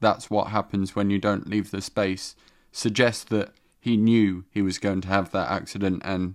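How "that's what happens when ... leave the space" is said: ordinary talk, nothing marked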